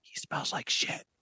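loud stage whisper, meant to be heard. Retelling how the wife leaned over to say it: imitating a loud whisper. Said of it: "the loudest whisper I ever heard".

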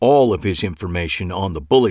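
ordinary delivery

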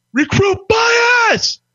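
loud, high drill-instructor yell, "bias" drawn out. Retelling a staff sergeant calling a recruit during rifle cleaning: imitating Staff Sergeant Sosa yelling loud. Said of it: "I hear Staff Sergeant Sosa yell loud".

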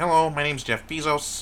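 put-on high, loud cartoon frog-puppet voice. Asked what someone sounds like, answering in Kermit the Frog voice. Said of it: "I feel like he sounds like Kermit the Frog. Like".

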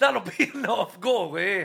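loud, slow, dismissive Irish priest voice. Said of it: "straight from Belfast".

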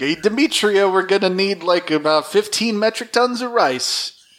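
accidentally slipping into a cartoon bear voice. Speaker imitates a request for tons of rice, slipping into a Yogi Bear voice. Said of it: "my Alpha 6 impression turned into Yogi Bear".

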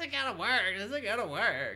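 high, loud, whiny complaining voice.

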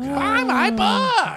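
put-on whiny nasal voice. Imitating the question-mark-suit guy selling government secrets: whiny Matthew Lesko voice. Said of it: "It sounds whiny when you say it like that".

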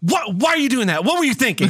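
flustered teacher voice. Retelling what a high school teacher said when upset: imitating an upset flustered teacher. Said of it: "a teacher who would get upset with us".

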